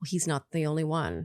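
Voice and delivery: put-on muttered whisper. Describing a woman's reaction, the speaker retells her whisper under her breath. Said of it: "she whispers under her breath".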